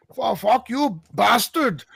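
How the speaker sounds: put-on very high-pitched broken English accent. Retelling what two Iranians said, in a put-on broken English accent. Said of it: "broken English".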